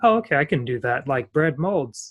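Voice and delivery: normal talking voice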